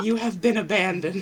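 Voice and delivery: hushed half-whisper, under the breath. Player voicing a character in a game scene, half-whispering to another character. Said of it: "She just whispers".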